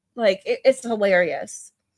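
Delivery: plain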